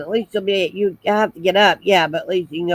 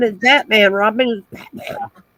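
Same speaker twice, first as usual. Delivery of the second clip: usual speaking voice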